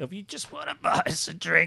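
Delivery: creaky, dry-throated, parched voice. Asking listeners to buy the hosts a drink, in a thirsty voice. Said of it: "that's my thirsty voice".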